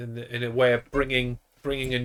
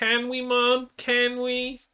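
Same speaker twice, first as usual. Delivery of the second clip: very high-pitched cartoon kid girl voice; 12 semitones higher than usual. Bantering with a co-host, doing a Lisa Simpson voice. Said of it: "trying to sound like um, Lisa Simpson".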